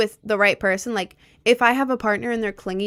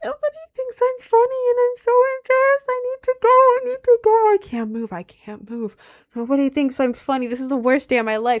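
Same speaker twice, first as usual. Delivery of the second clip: very high, wailing fake sobs; 14 semitones higher, 3 dB louder than usual. Acting out crying on stage after a first joke gets no laughs: mock crying. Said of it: "I'm just gonna start crying on stage and be like".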